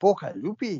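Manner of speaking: slightly Scottish put-on accent. Announcing number seven, the speaker repeats the name in a mild Scottish accent. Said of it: "Bit less Scottish that time".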